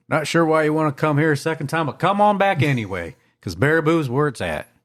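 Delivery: put-on southern US accent. Joking about a town's visitor slogan: southern accent. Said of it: "I used my southern accent".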